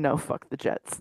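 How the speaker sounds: whispered mutter under the breath, barely voiced. Voicing a character who reacts quietly: muttered under his breath. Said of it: "Under his breath".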